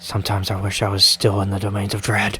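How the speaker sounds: muttering under breath. Voicing a character who mutters to himself while rubbing his temples: muttering under his breath. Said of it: "underneath his breath".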